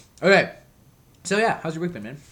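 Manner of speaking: speaking with mouth full of food. Eating fruit while chatting, the speaker asks the other person about his week, talking with mouth full. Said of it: "I'm just going to talk with my mouth full for a sec".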